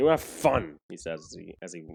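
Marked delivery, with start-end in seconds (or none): 0.0-0.8 growled speech. A character answering someone who is leaving to walk over, growling. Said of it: "he just growls".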